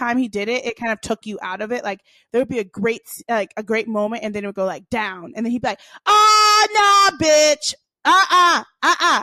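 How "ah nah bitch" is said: put-on loud hype-man screaming, higher and louder. Retelling how a concert-goer behind them kept yelling: imitating a man screaming like a hype man. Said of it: "screaming at the top of his lungs".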